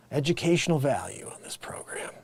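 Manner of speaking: soft, quiet whispered voice.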